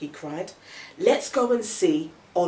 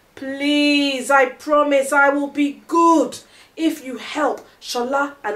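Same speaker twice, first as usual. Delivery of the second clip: high, loud, pleading, begging cry; 8 semitones higher, 8 dB louder than usual. Narrator reading Femi pleading again with Olu, crying out pleading. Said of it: "cried Femi".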